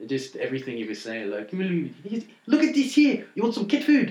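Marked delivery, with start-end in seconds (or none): 1.5-4.1 put-on loud high South African accent. Recalling a line from the film District 9; South African accent. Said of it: "I just love the South African accent".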